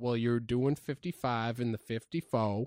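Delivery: ordinary delivery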